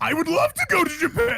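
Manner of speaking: very high, way too loud, overeager, slightly angry yell. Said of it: "That's my favorite voice right now".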